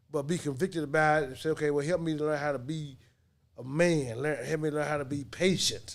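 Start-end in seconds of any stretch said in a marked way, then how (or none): none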